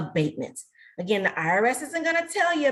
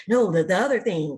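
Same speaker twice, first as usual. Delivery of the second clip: hushed stage whisper; 3 semitones lower, 4 dB louder than usual. Retelling what a man said after a talk: imitating a hushed voice. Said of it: "said in a real hushed voice".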